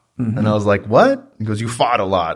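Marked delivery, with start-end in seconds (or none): 1.6-2.4 put-on broad, laid-on New York accent. Retelling a man repeating what he told the speaker, in a thick new york accent. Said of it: "he's got a thick New York accent".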